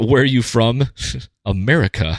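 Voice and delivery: put-on incredibly heavy British accent, laid on thick. Quoting a man's exchange from memory, in a thick British accent. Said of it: "in his incredibly incredibly thick British accent".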